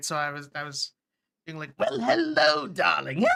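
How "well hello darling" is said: raised, loud, big comic-book villain voice. Retelling talking to Harley Quinn cosplayers, doing the Joker voice. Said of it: "I started doing the Joker voice".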